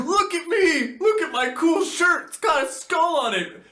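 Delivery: very high, loud, giddy bragging. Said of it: "He goes for broke".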